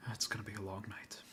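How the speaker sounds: mumbled under breath. Game master voicing the guard captain heading out, muttering under his breath. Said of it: "you'll hear under under his breath".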